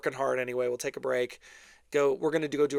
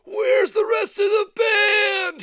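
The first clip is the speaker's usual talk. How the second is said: put-on very loud, shrill, high-pitched drunken heckling yell; 9 dB louder than usual. Retelling a drunk guy heard on a live recording: imitating a drunk guy yelling. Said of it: "some guy yell, like, some drunk guy".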